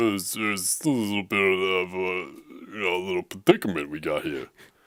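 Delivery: slow, drawn-out character voice. Imagining Rocky facing Darth Vader in a scene: Rocky voice. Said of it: "you're doing it better than me".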